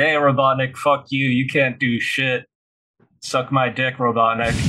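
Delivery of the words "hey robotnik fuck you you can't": plain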